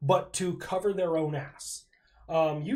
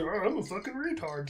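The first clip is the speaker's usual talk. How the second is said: snide, put-on mocking voice; 4 dB quieter than usual. Showing a reaction when someone cuts in: put-on mocking voice. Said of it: "I have a universal mocking voice that I use to mock people".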